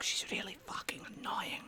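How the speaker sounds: whispered, put-on voice. Role-playing with the group, a character whispers a reply back, whispered reply in character. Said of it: "in Teven, he will answer back".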